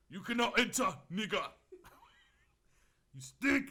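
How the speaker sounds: put-on loud Jamaican character accent with swooping pitch. Retelling how a man turned you away from training, as a Jamaican character from Shottas. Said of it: "Jamaican characters".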